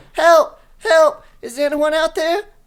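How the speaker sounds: very high, loud voice, well above a man's. Storyteller voicing a cry from behind the cellar door, higher-pitched voice. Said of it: "a higher pitched voice than a man's voice say".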